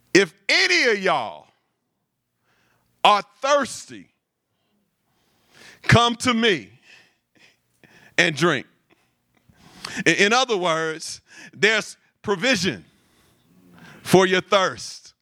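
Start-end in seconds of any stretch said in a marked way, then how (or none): 0.1-8.6 calling out loudly. Retelling Jesus calling out with a megaphone: loud voice. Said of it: "he's saying in a loud voice".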